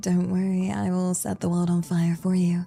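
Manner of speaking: very low, hushed, deep, soft motherly voice. Trying out different voices for the same line, in a deeper mommy-vibe voice. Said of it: "more deeper voice, sort of the more mommy vibe".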